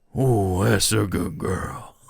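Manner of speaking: low put-on cowboy voice. Talking to chat, showing the voice that gets viewers excited: cowboy voice. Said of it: "the cowboy voice".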